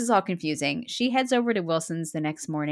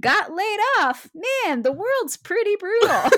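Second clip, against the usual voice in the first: mock bright, breezy cheer, high, loud, happy; 14 semitones higher, 5 dB louder than usual. Retelling how a man delivered his note, in a mock happy chipper tone. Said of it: "He says with a happy chipper tone".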